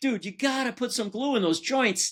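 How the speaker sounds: high, heated, insistent scolding tone. Retelling a call to the cabinet house: retelling own yelling. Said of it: "I'm yelling at that guy".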